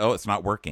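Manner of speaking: plain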